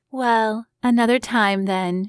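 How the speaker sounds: sultry purr. Reading a story aloud, a character answering a refusal: purring. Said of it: "she purred".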